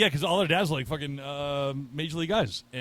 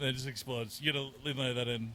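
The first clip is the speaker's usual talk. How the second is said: ordinary talk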